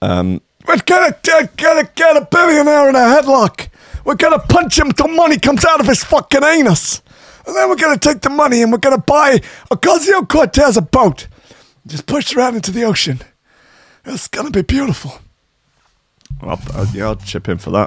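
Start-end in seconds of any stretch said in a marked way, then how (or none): 0.7-15.1 very high, squeaky put-on politician voice, stump-speech style. Doing an impression after naming it: Bernie Sanders impression. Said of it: "my best Bernie Sanders impression".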